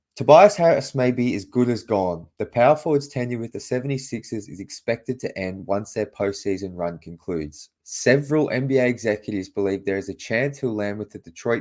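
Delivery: ordinary delivery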